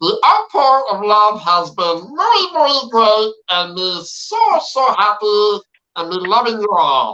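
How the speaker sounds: high, goofy, creature-like alien voice. Reading out his reply to the fans' outpouring of support, in a Jar Jar Binks voice. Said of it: "and say it in Jar Jar's voice".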